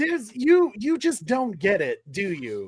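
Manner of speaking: ordinary talk, nothing marked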